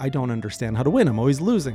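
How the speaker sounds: plain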